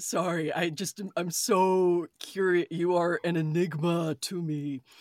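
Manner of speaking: gloomy, droning put-on voice. Questioning someone who refuses to answer, sounding like Eeyore. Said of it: "you sound like fucking Eeyore".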